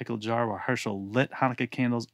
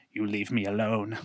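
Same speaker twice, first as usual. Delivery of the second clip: frightened, squeaky little goblin voice. Reading a story aloud, voicing a goblin shaking with fear: squeaky goblin voice. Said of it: "he squeaked".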